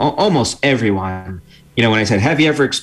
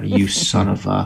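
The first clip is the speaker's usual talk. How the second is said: acted, nasty, mean whisper, slower. Describing whispering back at a virtual exercise instructor, acting out a nasty whisper. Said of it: "I'm whispering to myself very nasty things back at them".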